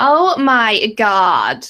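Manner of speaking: put-on loud, swooping Valley Girl accent. Offering to do an accent, says it in super stereotypical valley girl accent. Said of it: "I could do like a super stereotypical Valley Girl type one".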